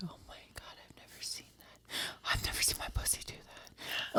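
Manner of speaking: soft, whispered, awed tone.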